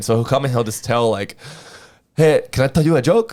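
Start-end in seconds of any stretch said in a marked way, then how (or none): 2.2-3.3 put-on thick Mexican accent. Retelling how a coworker starts telling customers a joke, imitating a thick mexican accent. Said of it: "he has a really thick accent".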